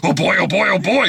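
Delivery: high, raspy put-on dog voice. Complaining about a movie dog's voice, imagining the bacon strips commercial dog voice. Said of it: "But if it was like the bacon strips dog".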